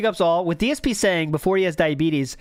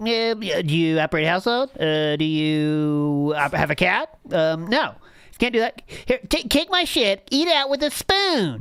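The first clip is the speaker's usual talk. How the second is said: slow cartoonish voice, "you" drawn out. Showing how the impressions have morphed: cartoonish DSP impression. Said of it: "kinda like this char-, this cartoon character".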